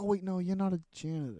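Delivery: stumbling, thinking-aloud, self-correcting speech. Retelling how a scene's line was said: imitating Charlie stumbling over words. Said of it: "kinda stumbling over his words 'cause he's, like, thinking of a plan".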